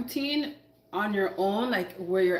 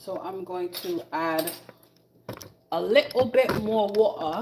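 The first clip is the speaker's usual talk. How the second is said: put-on, slow, deliberate British accent. While cooking and adding more water, said in a British accent. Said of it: "Do you like that British accent?".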